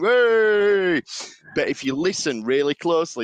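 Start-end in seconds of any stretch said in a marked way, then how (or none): 0.0-1.0 cheering, high and loud. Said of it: "reaction shot of everyone going".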